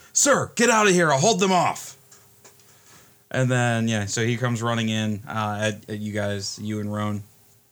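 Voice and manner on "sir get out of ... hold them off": high-pitched, loud, shouted yelling. The head of security runs in to warn the players, yelling. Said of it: "he yells".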